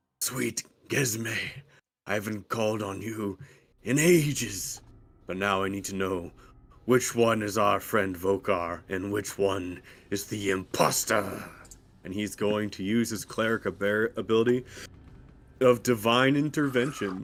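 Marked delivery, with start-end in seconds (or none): 0.2-11.4 low, murmured mutter under the breath. A cleric character calls on Gesme to find the imposter, muttered under his breath. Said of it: "under his breath".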